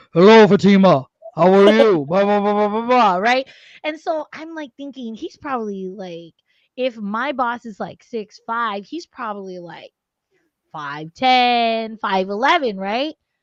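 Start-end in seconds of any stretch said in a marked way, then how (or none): 0.1-2.8 very loud, booming, super-deep bass voice. Describing a coworker seen on camera, imitating his super-deep voice. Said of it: "a super deep ass voice".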